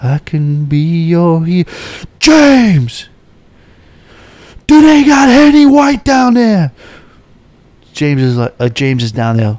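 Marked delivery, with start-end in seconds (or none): 0.0-6.7 very high, booming, echoing yell. Retelling someone yelling down to james across an atrium, booming shout from above. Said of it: "It's booming, echoing through the atrium".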